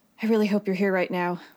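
quick whisper. Narrating a story, the speaker gives a character's words to herself, whispering. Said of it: "she whispers".

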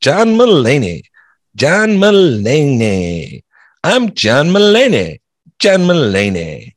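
very slow, loud, high, swooping, each word drawn out. Chatting about comedians, then doing a John Mulaney impression. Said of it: "That's my John Mulaney impression".

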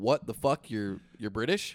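ordinary talk, nothing marked

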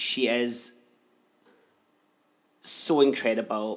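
tearful, welling-up voice. Speaking about an ex who stayed a friend: welling up. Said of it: "I'm welling up, actually".

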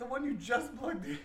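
shouting, high-pitched. Telling the other speaker which charger is meant: yelling. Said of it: "Why are you yelling at me?".

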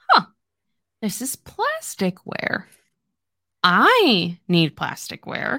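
slow, sing-song, playful, flirty, drawing out "I". Retelling how a man teased a woman about her bag, mock-flirty teasing. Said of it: "kind of flirting with her, kind of like teasing her".

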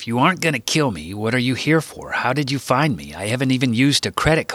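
plain reading voice

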